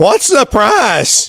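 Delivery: high, shrill, screechy woman's voice. Retelling a lady asking about a price tag, in a high, screechy voice. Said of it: "she says in a real high, screechy voice".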